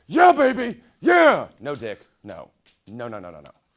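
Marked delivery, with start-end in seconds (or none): 0.1-1.4 very loud, shrill, high, hyped yell with huge energy. Imitating a radio basketball announcer who talks like this the entire time: Dick Vitale voice. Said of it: "he talks like this the entire time".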